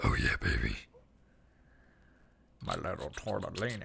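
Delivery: creaky, rough, swooping cartoon monster voice. Trying the cartoon voice again after a failed first attempt, Big Mouth hormone monster voice. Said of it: "that's really good".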